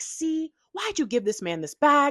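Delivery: angry, accusing tone. Retelling own angry words on finding the bag dumped: imitating own angry past self. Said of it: "I was pissed".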